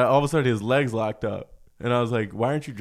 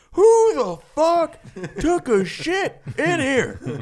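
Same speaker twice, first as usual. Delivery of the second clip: very high, shrill, slow, drawn-out swooping hollering; 4 dB louder than usual. Retelling what a man in the next bathroom stall did: imitating someone yelling. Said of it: "he yells out".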